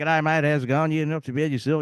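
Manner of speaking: stock Australian accent, laid on broad. Imitating own past voice from before living abroad: typical Australian accent. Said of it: "I used to sound like a typical".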